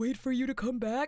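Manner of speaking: put-on cartoon starfish sidekick voice. Answering as the character, quoting a cartoon line: Patrick Star voice. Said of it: "Like that?".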